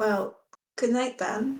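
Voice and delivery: hushed, muttered half-whisper under the breath. Voicing a character ending a conversation at night watch: half-whispering under her breath. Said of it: "just kind of whisper under her breath".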